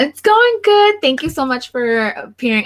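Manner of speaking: super high-pitched, swooping, excited voice. Welcoming a guest onto the show, in a super high-pitched excited voice. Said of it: "my voice is super high pitched".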